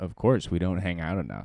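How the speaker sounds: ordinary talk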